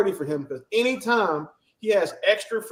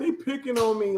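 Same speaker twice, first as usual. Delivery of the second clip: tearful, blubbering, whiny crying; 3 semitones higher, 4 dB quieter than usual. Imitating someone complaining to the chaplain: mock crying. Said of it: "he in the chaplain crying".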